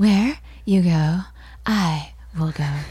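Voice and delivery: airy, breathy, slow delivery. Imitating people saying their vows, in a breathy voice. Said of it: "they get very breathy where they're like".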